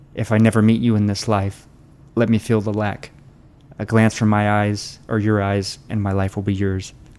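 moved, breaking voice, cracking with emotion. Reading a line aloud to viewers, voice cracking with emotion. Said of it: "my voice is cracking just reading that".

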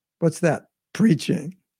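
ironic, sarcastic, disbelieving questioning tone. Retelling a teacher's reply to a disciple: imitating a sarcastic remark. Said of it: "Prabhupada sarcastically said".

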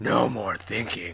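put-on monster creature voice. Retelling a monster's line from a Velma and Shaggy story, in monster voice. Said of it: "what's your monster voice?".

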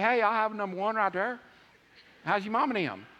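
easygoing, plain-talking Southern accent. Speaker shows how someone from the South orders at a drive-thru, in a Southern accent. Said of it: "if you're from the South, you say".

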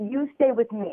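put-on French-accented English throughout. Retelling a phone call where a woman offers her home: french accent. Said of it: "in her French accent".

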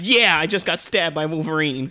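loud, thrilled, gleeful, super excited scream. Retelling the stunt woman's reaction again: imitating super excited speech. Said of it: "super excited".

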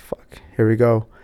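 plain

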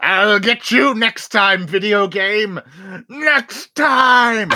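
throat-straining, very high, very slow put-on voice. Joking that a video game won this round: throat-straining put-on voice. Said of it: "even doing the voice I did hurt my throat".

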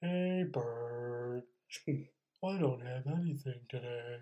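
barely audible, very quiet, hushed put-on voice. Addressing Bert near the end of the show, in Eeyore voice. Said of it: "I'm going to say it like Eeyore".

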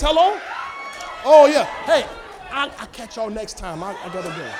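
fake, put-on phone-call style voice. Acting out leaving a dramatic family gathering: pretending to answer a phone call. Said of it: "Your phone ain't even ring".

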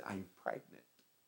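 play-acted crying, very soft, barely above a hush. Retelling a drama-group scene where the actress playing Mary confesses: imitating someone crying. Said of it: "she just started crying".

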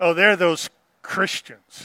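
scornful, sneering, sarcastic mocking. Retelling how early enemies of the church mocked believers: imitating sneering sarcasm. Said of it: "used it as a kind of sneering sarcasm".

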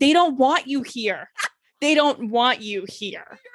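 put-on scolding, telling-off voice. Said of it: "You didn't say it like that".

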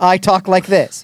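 ordinary delivery

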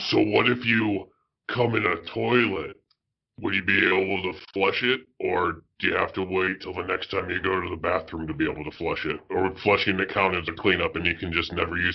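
dropped low like a bog monster. Repeating a question after a Skype dropout, in the Swamp Thing voice. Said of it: "I will do this in the Swamp Thing voice".

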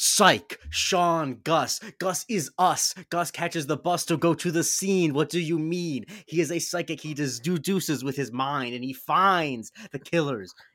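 rhythmic, performed spoken-word slam poetry delivery. Speaker showing his impression of slam poetry: slam poetry impression. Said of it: "my impression of slam poetry".

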